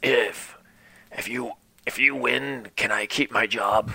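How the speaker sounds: hushed stage whisper. Voicing a character who leans in toward another: stage whisper. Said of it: "it's a stage whisper".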